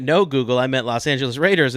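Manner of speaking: ordinary talk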